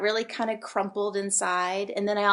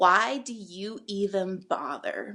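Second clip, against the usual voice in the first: withering scorn, thick with contempt, disgusted. Retelling what a boy said at the locker, imitating a disdainful, disgusted tone. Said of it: "with so much disdain and so much disgust in his voice".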